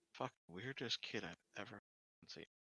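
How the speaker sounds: very hushed, quiet grumbling mutter under the breath. Retelling a man's reaction to the weird kid, muttered under his breath. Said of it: "Under your breath".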